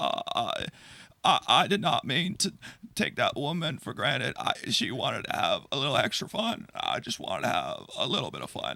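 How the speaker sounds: contrite, formal politician-like public statement tone. Apologizing on camera as asked, in a Bill Clinton impression. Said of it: "apologize like you are Bill Clinton in nineteen ninety-eight".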